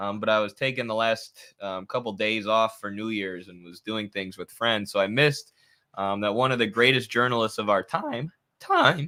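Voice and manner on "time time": voice breaking, catching and cracking mid-phrase. Paying tribute to a great journalist who recently passed away, voice cracking. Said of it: "voice crack".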